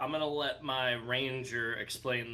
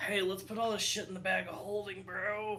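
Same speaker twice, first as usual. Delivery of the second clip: quiet, hushed whisper; 7 semitones higher than usual. Between gestures, a player's character whispers a suggestion to Mark. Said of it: "I'm gonna also whisper at Mark".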